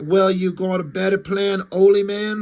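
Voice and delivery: loud, clumsy, bad put-on Australian accent. Retelling how Night Saber answered another character, Night Saber's bad Australian accent. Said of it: "Because he's Australian or something".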